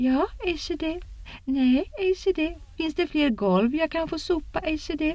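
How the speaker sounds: very high, piping, squeaky mocking voice. Reading Min as she teases in a put-on voice: squeaky mocking voice. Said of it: "sa hon med pipig röst".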